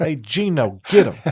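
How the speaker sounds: poorly done fake New York accent. Joking about getting beaten up in new york, in a bad new york accent. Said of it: "Those are bad accents".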